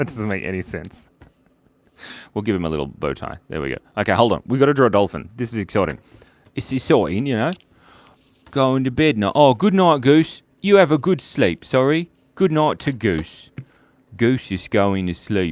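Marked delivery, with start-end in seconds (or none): 8.5-15.5 put-on English accent. Speaker narrates while drawing, in an english accent. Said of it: "I'm talking in an uh, English accent".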